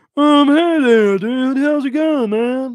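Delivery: very high, very loud cartoon voice. Guessing at a voice a viewer paid for, doing a South Park voice. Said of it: "Something like South Park voice like that".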